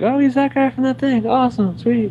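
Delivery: excited, gushing voice.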